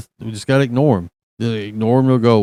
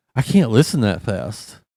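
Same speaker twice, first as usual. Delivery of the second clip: ordinary delivery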